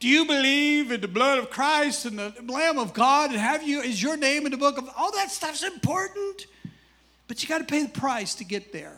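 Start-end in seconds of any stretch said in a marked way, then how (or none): 0.0-4.9 loud, hollering preacher voice. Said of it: "You don't go over there and holler".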